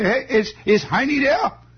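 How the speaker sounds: terrible put-on Bavarian German accent, very high. Retelling how people had to ask a question, in a terrible bavarian german accent. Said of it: "unless you talked in a terrible accent".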